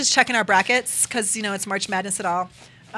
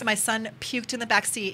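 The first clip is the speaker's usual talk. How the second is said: ordinary delivery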